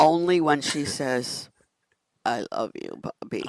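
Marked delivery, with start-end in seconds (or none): 2.3-3.4 put-on sleepy, tired little child voice. Speaker retelling what Maeve says at bedtime, imitating Maeve's tired little voice. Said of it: "that little I'm so tired voice".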